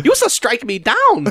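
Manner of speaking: high-pitched put-on character voice. Joking about Vader lines said in Jar Jar Binks voice. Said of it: "James Earl Jones next to Jar Jar Binks' voice".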